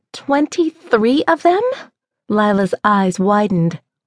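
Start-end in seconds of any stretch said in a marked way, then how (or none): 0.1-1.6 piercing, shrill, high-pitched voice. [name] reacting to Lila about the flood of texts, shrill. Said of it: "[name]'s voice was shrill".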